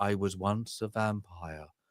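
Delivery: very quiet, low, slow, flat monotone murmur. Describing a vampire character's interview with a human, dry monotone voice. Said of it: "this really dry, monotone voice".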